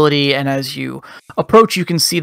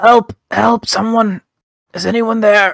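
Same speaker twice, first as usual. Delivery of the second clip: weak, feeble, pitched-up voice calling out; 6 semitones higher than usual. A game master voices someone under a fallen horse calling for help, weak voice. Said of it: "and a weak voice says".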